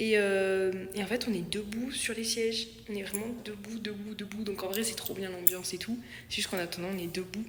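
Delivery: soft, hushed whisper. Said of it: "il faut que je parle plus doucement".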